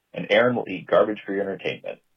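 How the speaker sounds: normal talking voice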